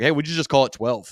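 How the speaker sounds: offhand, sarcastic, tongue-in-cheek delivery. Recalling a meeting about naming the church, retelling a sarcastic remark. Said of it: "I just kind of sarcastically was like".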